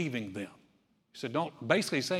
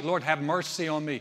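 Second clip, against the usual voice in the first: usual speaking voice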